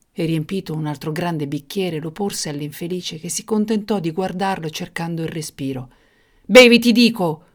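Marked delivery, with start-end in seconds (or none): 6.4-7.3 very loud, furious, raging shout. The tyrant orders the hesitating dwarf to drink more wine, shouting. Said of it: "urlò il tiranno".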